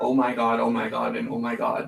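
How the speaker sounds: normal talking voice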